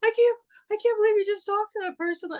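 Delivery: very high, sobbing hysterical wail. Retelling what a sister said at a concert: imitating someone crying hysterically. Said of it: "She's crying hysterically".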